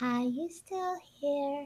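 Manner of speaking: hushed, tiny, soft robotic turret voice. Trying to place a creepy voice, doing the Portal turret voice. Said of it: "That is the turrets from Portal".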